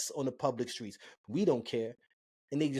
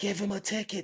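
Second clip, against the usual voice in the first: play-acted livid yell at full volume, high-pitched; 7 semitones higher than usual. Retelling a young woman's outburst at a cop: imitating someone screaming. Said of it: "screaming at the top of her lungs".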